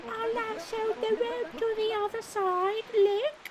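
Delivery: put-on British child voice. Voicing the character Mister Kokari in a game: put-on British child voice. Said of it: "What was the voice from Mister Kokari?".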